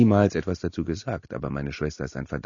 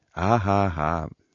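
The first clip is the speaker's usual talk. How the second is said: awful, stilted, forced fake laugh; 2 semitones higher than usual. Vince responds to the narrator's plea with an awful fake laugh. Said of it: "sagte Vince mit diesem furchtbaren, aufgesetzten Lachen".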